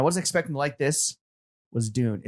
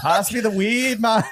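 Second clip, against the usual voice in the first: put-on Jamaican accent, pitched up; 8 semitones higher, 4 dB louder than usual. Joking with the others, asking for the weed: put-on Jamaican accent. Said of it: "I'm doing Jamaican".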